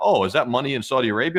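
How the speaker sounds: ordinary talk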